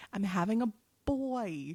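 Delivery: slow, deliberate, soft, drawn-out words. Revealing to the others that the baby is a boy, said slowly. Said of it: "I said that slowly".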